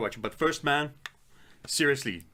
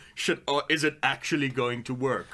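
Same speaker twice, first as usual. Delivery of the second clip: ordinary talk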